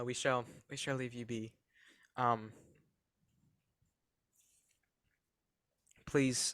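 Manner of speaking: talking with mouth full. Player speaking in the game while eating a graham cracker, talking with mouth full. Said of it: "Sorry, I'm eating a graham cracker".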